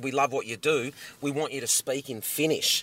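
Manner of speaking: ordinary talk, nothing marked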